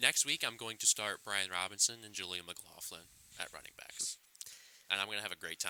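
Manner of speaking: normal talking voice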